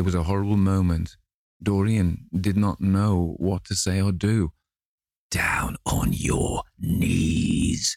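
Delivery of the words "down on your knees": very slow, gravelly, rough growled voice. Narrating the man confronting Dorian, reading his line growled. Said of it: "growled the man".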